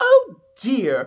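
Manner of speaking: exaggerated, grand, high, loud posh voice. Speaker describes a game character's support conversations, doing an exaggerated exquisite Penny voice. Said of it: "speaks in a very exaggerated and exquisite manner".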